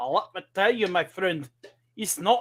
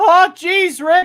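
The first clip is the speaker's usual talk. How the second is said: high-pitched, loud Saint Louis accent. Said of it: "if I wanna talk with apparently what, uh, Saint Louis accent, it sounds a little like this".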